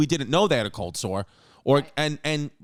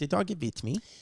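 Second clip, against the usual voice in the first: attempted put-on German accent; 7 dB quieter than usual. Retelling what a man said about his dog, in an attempted German accent. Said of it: "can't do a German accent".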